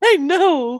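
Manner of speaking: very high, loud, squeaky cartoon mouse voice.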